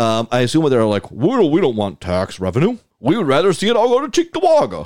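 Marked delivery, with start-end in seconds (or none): 1.1-4.9 put-on high, swooping voice. Imitating a council member dismissing tax revenue: impersonating Dickman. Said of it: "that's my impersonation of Dickman".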